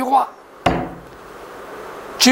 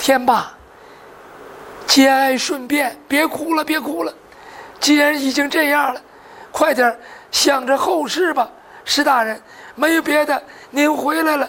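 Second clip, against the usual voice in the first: usual speaking voice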